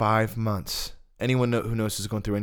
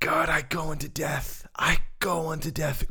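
screaming, much higher in pitch; 8 semitones higher than usual. Retelling his past prayer to the Lord, reenacting screaming out to God. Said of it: "I'm screaming out to the Lord".

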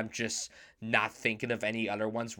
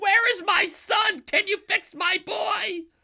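screaming, shrill, very high and very loud; 9 dB louder than usual. Imitating a character screaming for her son: imitating Winona Ryder screaming.

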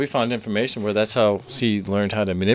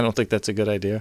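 ordinary talk, nothing marked

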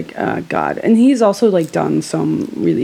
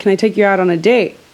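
put-on yelling voice; 2 semitones higher than usual. Retelling how a guy asked for a date across the street: imitating someone yelling. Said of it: "he, like, yelled it from across the street".

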